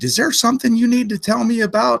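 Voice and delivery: mock very high, shrill, furious, angry screaming. Retelling how his then-wife arrived with the car: imitating a screaming wife. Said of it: "She gets out screaming and fucking yelling".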